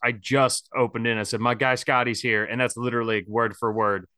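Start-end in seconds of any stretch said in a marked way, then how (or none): none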